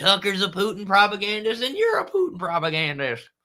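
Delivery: put-on dumb caricature voice, high, swooping, mocking. Commentator mocks liberals by acting out what they say about Tucker, mocking caricature voice. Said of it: "That's like my voice I usually use for conservatives".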